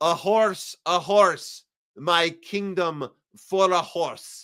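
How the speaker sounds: slow grand Russian-accented declamation. Speaker performs the last line of Richard the Third as Putin: Russian Shakespearean accent. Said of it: "in a Russian Shakespearean Russian Shakespearean accent".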